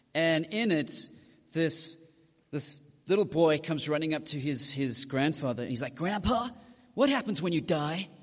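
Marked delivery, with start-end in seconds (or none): 5.9-8.0 poor, failed fake American accent. Retelling a sitcom scene where a little boy asks his grandfather, bad American accent. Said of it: "that was me trying to do an American accent".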